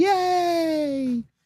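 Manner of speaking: bubbly, perky, very high, drawn-out yay. Mocking a persona that does not fit: imitating a perky cheerful cheer. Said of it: "not the perky, cheerful, like".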